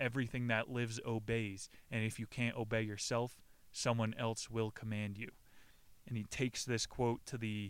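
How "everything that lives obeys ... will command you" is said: usual speaking voice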